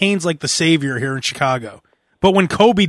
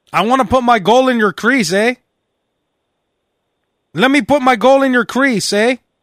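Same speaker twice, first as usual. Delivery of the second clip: put-on Canadian accent, pitched up; 7 semitones higher, 3 dB louder than usual. Quoting a young man with a poor track record, in a canadian accent. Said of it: "He has a Canadian accent somehow".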